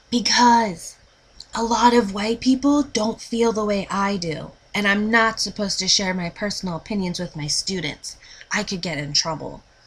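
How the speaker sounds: hushed whisper. Reading a teacher's line about getting in trouble: lowered, whispering voice. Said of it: "Joy lowers her voice as if she's scared".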